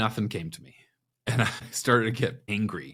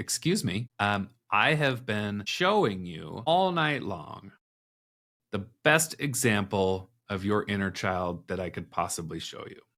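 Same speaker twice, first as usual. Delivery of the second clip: plain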